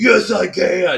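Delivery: loud angry demon voice. Retelling a miniseries scene, voicing Randall Flagg's reply in his old demon voice. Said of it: "in his old demon voice".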